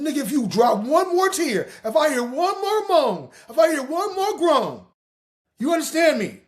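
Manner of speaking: acted high-pitched scolding. Retelling what his grandmother said when she came in: imitating his grandmother scolding. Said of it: "My grandmother came in on the third, said".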